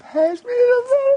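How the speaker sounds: put-on high, whining little-girl voice. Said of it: "she thought kind of whining".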